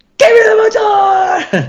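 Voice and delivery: play-acted urgent screaming, very high, shrill and drawn out. Recalling a relay race, the runner waiting for the baton is retelling a scream. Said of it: "just like screaming like".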